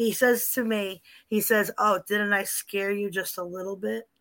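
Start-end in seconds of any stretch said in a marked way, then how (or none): 1.8-4.0 little sneaky imitated voice, quieter. Retelling what a voice said to scare, imitating a little sneaky voice. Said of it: "he had that little voice that said".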